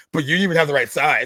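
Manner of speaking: acted loud, rude, smug, condescending tone. Retelling a scene, imitating Bo being condescending. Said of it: "but he's so condescending".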